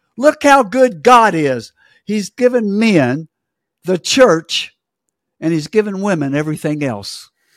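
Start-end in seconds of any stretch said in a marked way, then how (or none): 0.2-4.7 loud, jubilant, gushing, excited exclamation. Retelling what people said to the speaker, imitating loud excited speech. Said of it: "they were just so loud in it".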